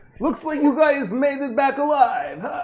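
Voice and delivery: put-on very high Italian mobster accent. Playing a character for the group, speaking in a put-on Italian accent. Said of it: "It was more Italian, I think".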